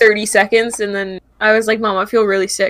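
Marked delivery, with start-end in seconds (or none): none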